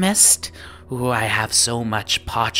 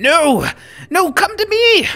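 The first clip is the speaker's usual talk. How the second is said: calling out, raised, very high and drawn out; 7 dB louder than usual. Voicing rival shopkeepers who call the customers to come to them: voicing Brock and Dissen calling out. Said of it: "And you hear Brock and Dissen go".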